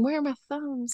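high, hushed muttering under the breath. Acting out someone saying a line just under her breath: imitating muttering under breath. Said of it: "just under her breath".

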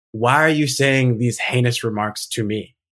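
normal talking voice

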